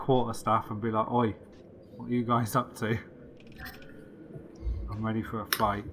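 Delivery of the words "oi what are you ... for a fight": breathy, intimidating, imposing whisper. Voicing a tall, imposing character challenging cloaked elves: tall imposing character's challenge. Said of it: "I'm tall and imposing, so I'm gonna whip out my".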